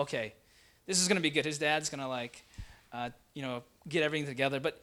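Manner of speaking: plain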